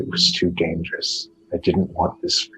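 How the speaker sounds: whispered voice. Voicing a voice heard in a maze: whisper. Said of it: "you hear a whisper that says".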